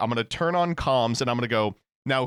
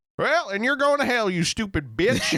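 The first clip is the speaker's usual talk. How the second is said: high, put-on drawled Southern accent; 8 semitones higher than usual. Retelling how a streamer preaches to kids: imitating a Southern accent. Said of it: "do the accent".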